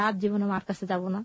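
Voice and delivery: normal talking voice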